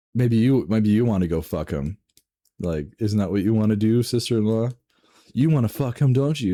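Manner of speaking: put-on full-throated scream, super loud, top of lungs. Speaker retells a wife confronting her sister-in-law with family nearby, imitating a wife screaming. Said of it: "screaming at the top of her lungs".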